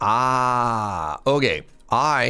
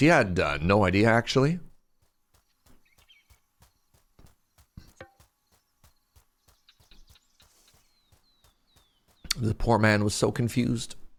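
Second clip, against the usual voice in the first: put-on broadcast announcer voice and delivery. A streamer talking to chat mid-game switches to announcer voice. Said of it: "Announcer's voice".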